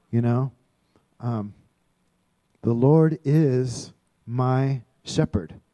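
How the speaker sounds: slow delivery. Showing how to take a passage and dwell on it, the speaker says it slowly. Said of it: "just say it slowly".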